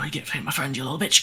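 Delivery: muttered quietly under the breath. Voicing a half-dead character in a game who lacks strength to scream, said under his breath. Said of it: "says under his breath".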